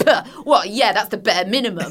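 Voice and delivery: put-on dismissive, belittling, mean voice. Acting out the inner critic mocking a small win: imitating a mean inner voice. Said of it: "Mean voice will go".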